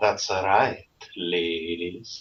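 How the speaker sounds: put-on seductive Transylvanian accent. You've introduced yourself and offered to entertain the ladies in your accent: put-on sexy Transylvanian accent. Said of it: "apparently he's from Transylvania".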